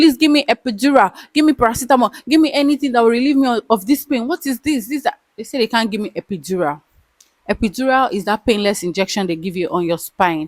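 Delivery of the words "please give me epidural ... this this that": put-on high, pleading, begging shout. Recounting calling out for help while in pain: retelling a shout. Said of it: "I was shouting".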